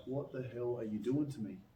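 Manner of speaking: ordinary talk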